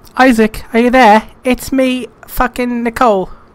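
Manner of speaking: put-on British accent, high-pitched and loud, calling out. Player voicing a game character calling out to Isaac, Nicole in put-on British accent. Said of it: "I don't even think she had a British accent".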